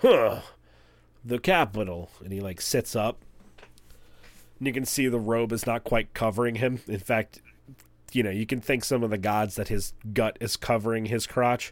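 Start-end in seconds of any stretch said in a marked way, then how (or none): 0.0-2.1 voice of a pot-bellied hill giant. Voicing a lounging hill giant greeting approaching guests: hill giant voice. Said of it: "the giant sort of, like, stops picking his nose with his pinky and goes".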